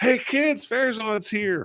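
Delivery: eager, excited shout, very high pitch. A game master voices a townsman calling the kids outside, yelling excitedly. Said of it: "you just hear him yell".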